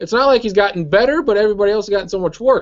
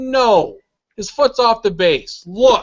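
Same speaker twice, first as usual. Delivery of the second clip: severe, stern, firm, no-nonsense tone; 3 semitones higher than usual. Retelling how a broadcaster answered a replay question: imitating a stern reply. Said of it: "Very sternly".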